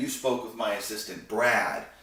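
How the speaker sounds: ordinary delivery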